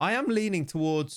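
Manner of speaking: voice cracking up high in mid-phrase. Talking through player picks, the speaker's voice cracks: voice cracking. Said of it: "That was a voice crack".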